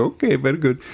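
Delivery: put-on Middle Eastern accent. Retelling a cab ride to the U S Mint, quoting the cabbie: Middle Eastern accent. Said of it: "I'll do this in my best Middle Eastern accent".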